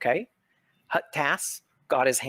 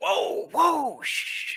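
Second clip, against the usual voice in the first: very high-pitched hushing, shushing whoa. Voicing a character who hushes the players talking too loudly: shushing the players. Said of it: "tells you to, like, quiet down".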